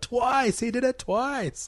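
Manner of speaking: high, slow, crowd-like yelling out. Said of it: "everyone yells out".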